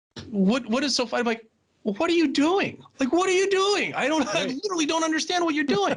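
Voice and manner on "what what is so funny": acted-out angry, irritated, indignant voice. Retelling a man who got madder at them for chuckling, imitating an angry man. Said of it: "the guy would just get even madder".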